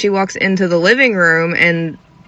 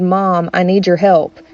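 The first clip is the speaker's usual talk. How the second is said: put-on sinister menacing voice, slower. Telling of a voice calling down from upstairs to a mother, put-on sinister voice. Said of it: "in the most sinister voice".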